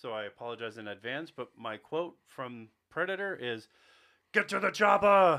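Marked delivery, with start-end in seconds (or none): 4.3-5.4 put-on booming, loud, high, terrible thick European accent. Speaker apologizes in advance, then quotes Predator in a terrible Arnold impression. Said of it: "impersonation of Arnold is going to be terrible".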